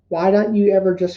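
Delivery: plain reading voice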